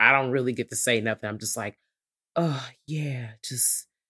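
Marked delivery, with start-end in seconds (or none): 1.3-3.8 put-on breathy voice, much quieter, slower. Retelling a woman unhappy with her role, imitating a breathy voice. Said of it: "I'm talking all breathy and stuff".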